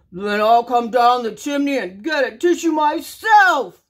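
loud, roaring big bad wolf voice. Narrator voicing the mad wolf mocked by the three little pigs, roaring. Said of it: "he roared".

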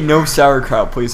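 plain

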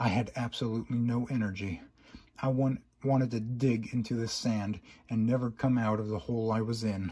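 ordinary delivery

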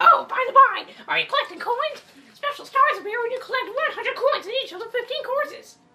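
very high-pitched, very loud belted voice. Reading a toad's lines aloud in a game: Toad voice. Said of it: "I'm usually very good with the toad voice".

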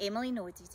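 plain reading voice

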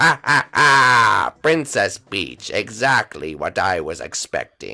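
very low, slow, gloating villain voice.

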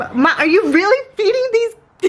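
high, loud, disbelieving laughing squeal.

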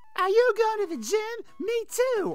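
very high, loud, swooping cartoon mom voice. After a first try missed, the streamer retries the line in Marge voice. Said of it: "Only mom can have that Marge voice".

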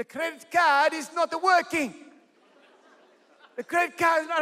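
put-on Bulgarian-accented speech. Retelling what she said when she rang him, in a put-on Bulgarian accent. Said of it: "In her little accent".

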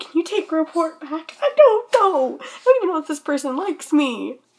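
put-on freaking-out panic. Speaker tells listeners about a misunderstanding, freaking out. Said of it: "I'm freaking out".

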